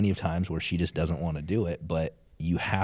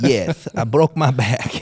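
imitated male voice with a lisp and twang; 7 semitones higher, 10 dB louder than usual. Retelling a man's answer to an interviewer, as Mike with a southern twang. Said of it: "you gave Mike a little southern twang there".

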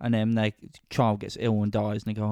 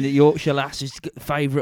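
put-on advert announcer voice, higher and louder; 4 semitones higher, 7 dB louder than usual. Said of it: "he'll be there going".

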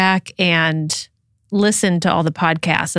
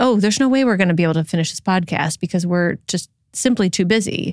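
ordinary talk, nothing marked

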